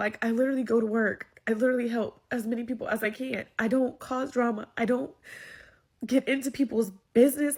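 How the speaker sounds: crying while talking, tearful voice. Speaking about their own life, crying while talking. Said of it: "I thought I was not going to cry, but clearly I'm going to cry".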